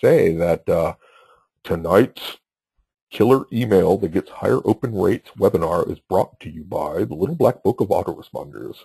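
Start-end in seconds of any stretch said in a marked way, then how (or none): 1.6-8.8 put-on broadcast announcer voice, ad-read style. Announcing who brings tonight's webinar, in an announcer voice. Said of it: "I'm going to put my announcer voice on here".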